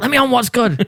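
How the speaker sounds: high groveling voice. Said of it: "I was on my knees groveling".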